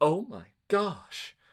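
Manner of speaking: high-pitched exclamation dripping with sarcasm. Retelling own reply to someone too busy giving ibuprofen: retelling own sarcastic reply. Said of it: "candidly and rather sarcastically".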